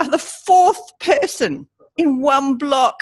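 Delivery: put-on quivering sob. Speaker retelling their reply to the fourth Bible offer in one block: fake sob in voice. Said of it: "I actually put a little sob in my voice".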